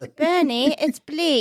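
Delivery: fake, put-on British accent. Retelling a scene, the speaker redoes a woman's line to bernie: put-on british accent. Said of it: "that was my British voice".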